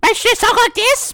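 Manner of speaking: shrill, squeaky, very high, loud gnome voice. Trying out a voice for a character, in a high-pitched gnome voice. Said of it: "I sound like a little uh, blah, blah, blah, blah, gnome".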